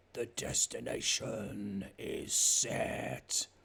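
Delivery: gravelly growling delivery. Game master voices the ship speaking to the players: rough, growly voice. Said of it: "this really rough, growly version".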